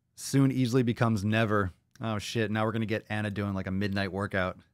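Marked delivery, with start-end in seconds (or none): none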